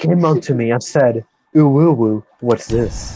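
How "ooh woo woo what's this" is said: put-on, deliberately manly, fake masculine voice. A girl retells someone coming up to her, using a put-on manly voice. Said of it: "giving myself a manly voice".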